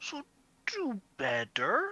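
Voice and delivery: condescending tone. Narrator voices a woman grabbing the listener's cheek; patronizing tone. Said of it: "in a patronizing tone".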